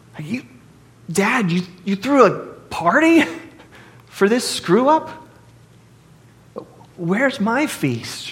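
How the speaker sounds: mock indignant protest. Acting out the older brother complaining to his father: acting out indignation. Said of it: "you hear the indignation in his voice".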